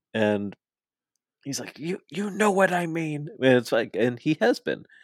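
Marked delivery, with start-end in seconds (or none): 1.8-3.2 put-on very high, crotchety, angry old-man voice. Retelling Taz complaining about the Twitter machine: imitating an angry old man. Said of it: "an angry old man shouting at the clouds".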